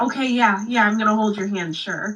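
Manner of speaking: acted nervous, eager, panicked, caving tone. Retelling a date, the speaker acts out panicking at the man's countdown. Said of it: "I panicked and went".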